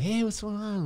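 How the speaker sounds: overly chummy, friendly tone. Imitating a touchy ex-boxer greeting people: imitating Frank, touchy. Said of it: "he'd always be like".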